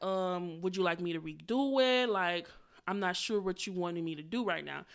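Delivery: quiet, even-toned delivery. Retelling a reply to someone who didn't like it, in a calm even tone. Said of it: "keeping an even tone".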